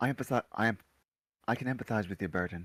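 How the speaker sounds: soft, breath-only half-whisper. Playing a character, half-whispering to another character climbing into a cart: half-whispering. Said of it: "whisper to him".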